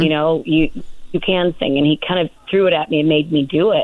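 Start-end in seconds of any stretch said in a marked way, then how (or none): none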